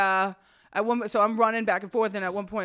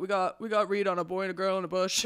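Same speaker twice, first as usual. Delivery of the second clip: ordinary talk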